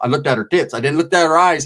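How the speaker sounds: ordinary talk, nothing marked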